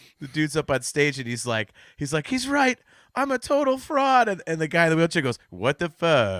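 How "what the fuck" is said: electronic speech-synthesizer voice, robotic and computer-like. Retelling a theater scene where the man in the wheelchair reacts, in a robot voice. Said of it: "in that robot voice".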